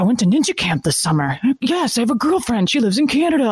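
put-on high-pitched nerdy child voice. Retelling a movie scene about a dorky kid: imitating Napoleon Dynamite. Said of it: "he's like".

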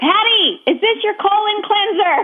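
loud shrill scream. Acting out someone knocking again and screaming the question even louder, retelling a scream. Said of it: "scream it even louder".

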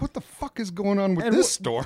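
scared, shaken, high-pitched outburst. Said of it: "scared feeling in her vo-, in her tone".

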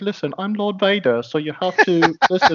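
put-on high-pitched voice with a British accent. Retelling Eddie Izzard's stand-up bit to the others, do Darth Vader with a high-pitched British voice. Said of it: "if he just had a high-pitched British voice".

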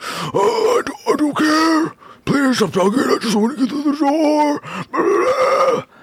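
very high, slow, drawn-out strange voice. Retelling how they sound when Marcus keeps calling, imitating own weird voice. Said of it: "I have this really weird voice where I'm just like".

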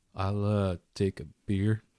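put-on regional drawling accent. A player's character orders a drink from a server, with an Andariel drawl. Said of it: "The drawl is an Andariel thing".

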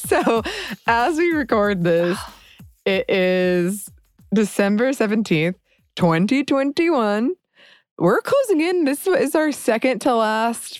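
drawn-out speech through laughter. Giving the recording date while doubting what year it is, laughing while talking. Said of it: "I'm sorry I'm laughing".

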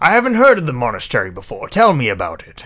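loud, fast posh accent.

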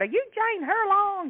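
very high, sugary, sweet country woman voice. Retelling a woman who recognized her, in a sweet country woman accent. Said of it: "This real sweet accent, country woman".

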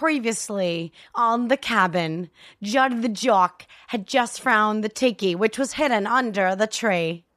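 fake-sounding Australian accent. Showing another speaker the only other accent possible: bad Australian-Kiwi accent. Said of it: "this is the only other accent I can do".

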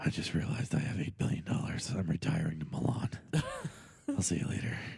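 very low, tired hero voice with swooping pitch. Joining a group bit, doing a put-on tired Batman voice. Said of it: "He sounds like a tired Batman".

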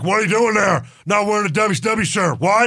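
loud, demanding hollering yell. Retelling a wrestler scolding Taz over a shirt: imitating Stone Cold yelling. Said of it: "he yelled at Taz".

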